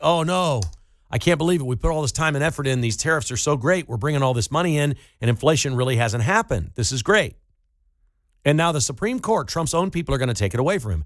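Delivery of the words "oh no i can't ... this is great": normal talking voice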